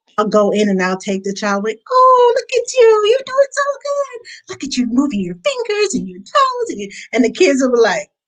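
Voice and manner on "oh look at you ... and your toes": very high, animated, sing-song mothering voice. A newborn care specialist showing how she talks to babies, high-pitched animated voice. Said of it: "a high pitched animated voice that catches their attention".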